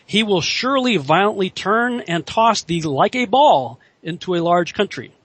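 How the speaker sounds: ordinary delivery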